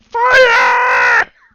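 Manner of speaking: panicked screaming. Voicing gnome guards who see a fire elemental: guards screaming. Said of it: "six Svirfneblin guards all start screaming".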